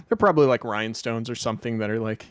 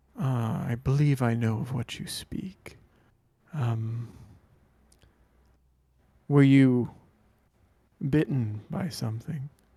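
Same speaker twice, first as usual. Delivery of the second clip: whispering discreetly. Voicing a character who leans in to a player: whispering discreetly. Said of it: "comes up to you and whispers to you".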